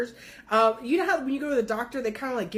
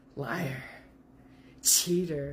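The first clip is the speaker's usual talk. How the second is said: weird machine-distorted voice, very low; 7 semitones lower, 4 dB quieter than usual. Retelling what they said over a walkie-talkie hidden in his closet, in a weird distorted voice. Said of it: "in a weird distorted voice".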